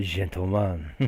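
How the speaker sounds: put-on heavy French accent. Having never tried one before, the speaker attempts a line in a heavy French accent. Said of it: "but at a heavy French accent".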